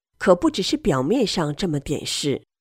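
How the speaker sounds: ordinary talk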